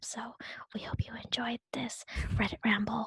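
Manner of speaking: whispering. Podcast hosts sign off, whispering so they won't laugh; whispering. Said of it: "we're whispering because if we talk normally".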